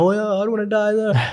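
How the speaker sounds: put-on tearful, high-pitched little kid voice, mid-cry. Retelling a childhood talk about death with mum: imitating crying as a kid. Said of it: "I'm a kid crying, like".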